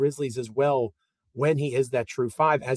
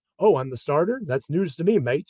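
terrible, bad put-on New Zealand accent; 2 semitones higher than usual. Quoting a basketball player's joke going into the season, in a terrible Kiwi accent as Steven Adams. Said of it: "That's a terrible Kiwi accent".

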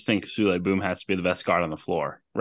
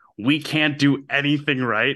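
put-on high, unhinged, drawn-out coach scream; 6 semitones higher than usual. Retelling how Kelvin Sampson turned to his bench: imitating Kelvin Sampson screaming. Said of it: "literally screams".

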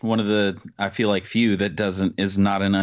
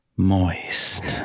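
"moist" dragged out very slowly, deep and low; 2 semitones lower than usual. Showing how to say a favorite word: really slow and low moist. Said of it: "You got to say it really, really slow and low".

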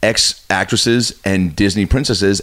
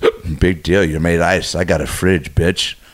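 mock muttering under the breath, much slower; 4 semitones lower than usual. Retelling what a woman said under her breath, imitating someone muttering. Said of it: "under her breath just goes".

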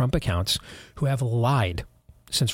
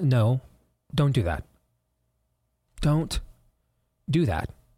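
slow, deliberate, angry telling-off, getting mad. Reacting to part of someone's tweet, getting mad. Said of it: "this is where I get mad now".

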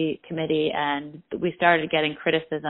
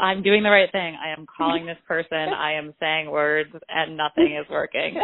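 normal talking voice

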